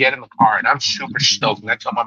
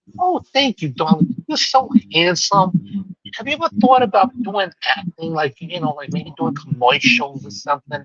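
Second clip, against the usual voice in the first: put-on high-pitched old New York lady voice; 5 semitones higher than usual.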